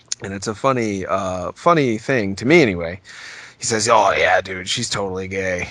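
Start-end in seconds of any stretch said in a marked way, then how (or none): 3.9-5.7 put-on older brother voice, dead sure and insistent. Retelling an older brother's claim: impression of older brother. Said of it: "your impression makes him sound like a".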